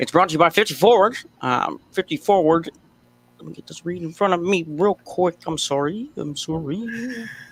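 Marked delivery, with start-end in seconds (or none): 0.0-1.2 put-on old-time radio announcer voice, higher. Starting a traffic report after announcing an old-timer radio voice: old-timer radio announcer voice. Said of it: "like an old timer kind of radio guy".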